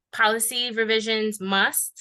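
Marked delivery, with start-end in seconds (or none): 1.4-2.0 heavy stress on the word "must". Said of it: "emphasis on the must".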